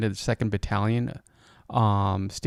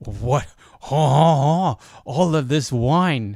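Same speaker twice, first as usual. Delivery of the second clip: put-on, imitated French accent; 3 semitones higher, 4 dB louder than usual. Imitating french soldiers finding a wine cellar: french impression. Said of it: "that's my French impression".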